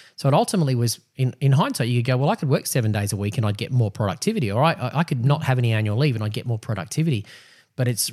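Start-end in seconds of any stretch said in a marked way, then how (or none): none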